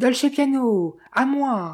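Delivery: desperate shout. Narrator, unarmed as the gunman runs up, calls to Dolce Piano, frantic cry. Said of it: "criai-je d'une voix éperdue".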